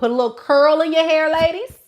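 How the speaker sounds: high, loud sarcastic mock yell.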